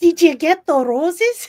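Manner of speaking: put-on Jersey accent turning Spanish-sounding. Rehearsing a scripted line, a Jersey accent slipping into Spanish. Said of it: "Now you suddenly went Spanish".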